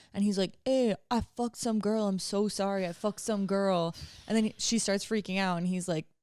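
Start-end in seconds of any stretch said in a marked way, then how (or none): 0.7-4.0 put-on drunk-sounding speech. Retelling a phone call where the caller was very drunk: imitating a drunk caller. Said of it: "obviously very drunk on the phone".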